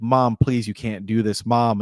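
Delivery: imitated, desperate pleading tone. Retelling a movie scene where Tom begs his mom to open the door: imitating Tom begging. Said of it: "he's begging his mom to open the door".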